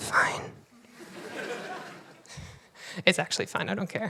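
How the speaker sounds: breathy, hushed whisper, very quiet. Speaker telling viewers about being recognized from Vine or Twitter, whispering.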